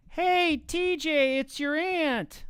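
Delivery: very high, loud, drawn-out ant voice. Speaker showing off the voices they can do for animation, ant voice. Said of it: "the voice where I do the voice of an ant".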